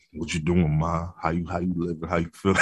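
deep, low, soft flirty voice.

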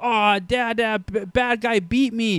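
put-on very slow, high, drawn-out little-kid voice. Imitating a two and a half year old son who lost a game: imitating a toddler son. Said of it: "my impression was nearly as adorable".

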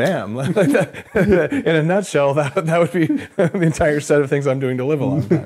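high-pitched speech with laughter throughout.

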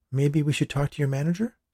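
hesitant, meek voice. A woman speaks to a customer service worker, timidly. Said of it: "The woman asked timidly".

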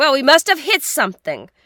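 very loud, high exclaiming cry. Third Officer Pittman on the ship, exclaiming loudly. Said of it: "exclaimed loudly".

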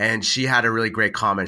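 usual speaking voice

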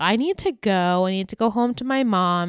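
usual speaking voice

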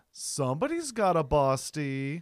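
extremely slow, stretched delivery. Retelling what an older gentleman said from his car: imitating an older man's line. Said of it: "he says it like this".

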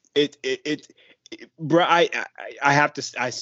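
stuttering. Reacting to talk of a player's offensive game: stuttering. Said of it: "I'm stuttering now because it's just ridiculous".

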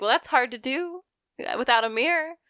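mock-sassy, sarcastic comeback tone. Retelling a lady's reply to a compliment, mock-sassy sarcastic reply. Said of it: "sassy and you're, like, sarcastic".

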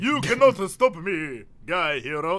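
vampire count character voice. Acting a scene of Guy Hero meeting Dracula: Dracula voice. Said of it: "That was my Dracula".

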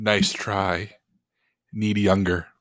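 mild, gentle, slow, unhurried voice. A voice speaks from a painting; very soft, very gentle voice. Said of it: "A very soft, very gentle voice".

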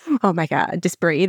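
ordinary talk

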